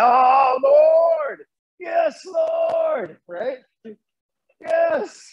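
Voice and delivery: very high, very drawn-out, slow rapturous cry. Retelling how a worship leader cried out to God: imitating overly passionate worship. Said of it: "it almost sounded sexual".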